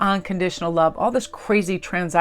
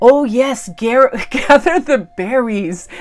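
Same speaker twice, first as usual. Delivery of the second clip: put-on very slow, raised old man's Eastern European accent; 5 semitones higher, 7 dB louder than usual. Retelling an elderly man's remark while she gathered berries, in his Eastern European accent. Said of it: "wonderful um, Eastern European accent".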